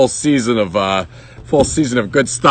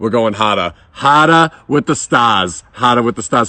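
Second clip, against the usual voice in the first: put-on overdone Boston accent. Playing up an accent on purpose for the viewers: exaggerated boston accent. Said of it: "annoyed with my Boston accent that anytime that I can really blow it out of proportion".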